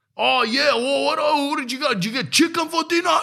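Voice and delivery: put-on shrill yelling, very high and loud. Complaining about people at a public pool, mimicking someone on FaceTime, imitating someone yelling on phone.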